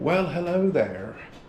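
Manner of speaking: sudden switch into an American accent. Vlogger greeting viewers at the start of a new vlog, in an American-sounding accent. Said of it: "why did I go all American kind of accent".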